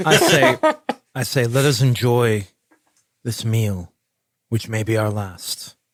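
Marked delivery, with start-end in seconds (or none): 1.5-5.7 grim, gloomy, dour, foreboding tone. Speaking in character at a shared meal before riding to battle: grim tone. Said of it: "don't be so grim".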